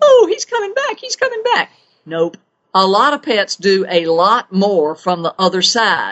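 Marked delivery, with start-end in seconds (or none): 0.0-1.7 very high, delighted, happy, repeated exclaiming cry. Describing how most people come out of it, imitating a happy voice. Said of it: "with a happy voice going".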